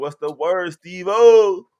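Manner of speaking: very high-pitched, booming, very loud put-on voice. Greeting Steve O with a yo yo yo, in a Bobby voice. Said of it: "in my Bobby voice".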